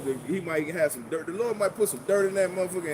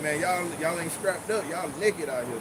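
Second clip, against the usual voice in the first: usual speaking voice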